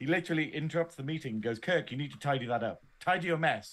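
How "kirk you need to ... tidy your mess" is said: mock-angry, really angry outburst. Retelling how a man interrupts a meeting to scold someone, retelling a really angry outburst. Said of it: "And gets really angry at him".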